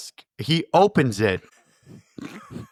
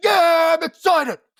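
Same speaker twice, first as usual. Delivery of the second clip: very high, loud, excited shout. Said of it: "when he gets excited".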